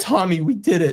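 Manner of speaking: getting emotional. Retelling the moment the news came, getting emotional. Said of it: "And I'm gonna get emotional".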